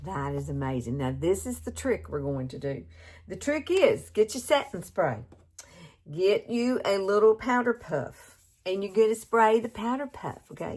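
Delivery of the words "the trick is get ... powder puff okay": motherly, pitched-up, step-by-step careful tone. Demonstrating a makeup trick to viewers, in a motherly tone. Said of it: "I sound like a mama".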